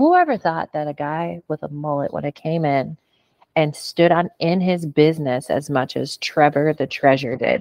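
usual speaking voice

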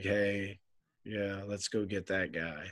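deadpan, flat, slow sarcastic cheer. Questioning why the team would want a player, with sarcastic flat enthusiasm. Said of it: "I'm trying to use a certain tone of voice".

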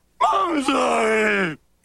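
screamed speaking voice. Recapping a scene between Debbie and Dog, Dog's scream-speak voice. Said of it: "Dog has like a scream speak voice".

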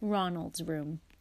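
ordinary talk

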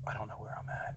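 soft, unvoiced, whispered aside.

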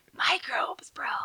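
breathy, whispered, raspy surfer-dude voice. Repeating the other speaker's surfer dude line: surfer dude voice, sounding like a smoker. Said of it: "I sound like, um, a smoker".

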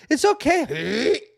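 put-on very high, shrill, loud childlike screaming. Father retelling his youngest child in the messy bathroom, imitating a screaming child. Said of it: "her youngest is in there just screaming".

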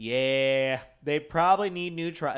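put-on thick Southern accent. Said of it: "He has this thick Southern accent".

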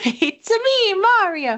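very high, cartoon-like video-game hero voice. Joking that a dragon's voice actor also voices Mario: Mario voice. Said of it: "the main dragon voice is also Mario's voice".

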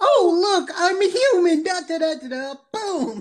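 super-high, loud voice. Describing a character who nonchalantly takes down an army, super high Hootie voice. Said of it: "Why did I go super mega high when I tried to do Hootie earlier?".

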